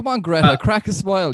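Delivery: sarcastic delivery. Retelling a remark to someone called too serious: sarcastic address, retold. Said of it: "I'm kind of being a bit sarcastic here".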